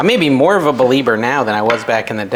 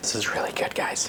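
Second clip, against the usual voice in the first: very soft, excited whisper. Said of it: "See, I'm whispering again".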